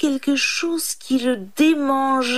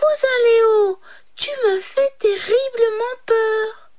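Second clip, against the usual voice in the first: tiny, high, squeaky mouse-like cry; 9 semitones higher than usual. Reading a fable, the narrator voices the little mouse calling to the lion: high little cry. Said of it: "poussa un petit cri aigu".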